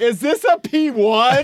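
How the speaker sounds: play-acted very high, slow, stretched-out yell. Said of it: "in the parking lot just screaming?".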